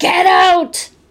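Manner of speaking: very high, loud, menacing, threatening voice. Recounting what a man heard on an EVP recorder at a bridge: mock threatening male voice. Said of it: "a threatening male voice say".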